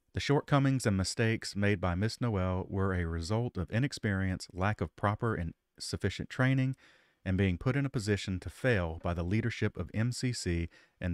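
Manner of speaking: usual speaking voice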